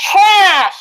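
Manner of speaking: shrill, very loud, high-pitched full-volume yell. Leader sorts items with a group, everyone saying the answer really loud. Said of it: "Let's let's say it really loud".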